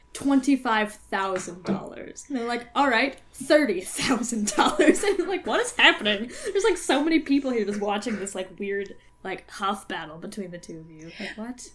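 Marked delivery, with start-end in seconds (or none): none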